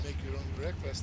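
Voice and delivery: ordinary delivery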